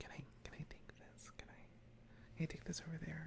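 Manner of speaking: hushed whispering voice.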